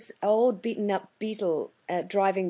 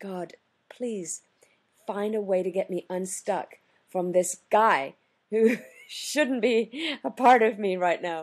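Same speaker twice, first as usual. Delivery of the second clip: quiet muttering under the breath. Retelling a prayer said while hooked to another car: imitating muttering under breath. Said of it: "under my breath".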